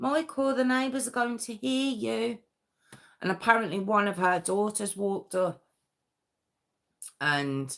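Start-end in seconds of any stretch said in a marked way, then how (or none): 0.0-2.4 prissy, prim tone with pitched-up voice. Retelling what a woman called from the kitchen window, mocking Angela's prissy voice. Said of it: "little Miss Prissy Pants".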